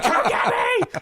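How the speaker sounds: very high, acted-out, pleading hollered yelling. Retelling calling to parents from a haunted house balcony: imitating own past yelling. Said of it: "as I'm yelling at them".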